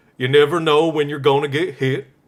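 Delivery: put-on Southern accent with a shifted voice. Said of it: "let me see if I can do the Forrest Gump accent".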